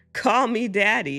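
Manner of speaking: hissing. The narrator reads what some listeners pictured being said to a toddler, hissing.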